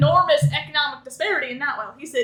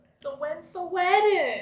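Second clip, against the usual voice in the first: mock motherly voice; 2 semitones higher, 4 dB quieter than usual.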